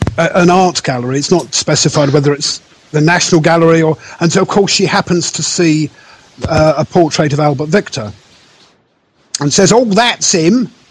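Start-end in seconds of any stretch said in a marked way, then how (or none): 9.7-10.7 put-on higher-pitched, near-Cockney accent.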